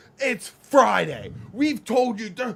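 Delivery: shrill, booming, very loud, high, drawn-out yell. Retelling how one guy yelled at another on mushrooms: imitating someone yelling. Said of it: "he starts yelling at him".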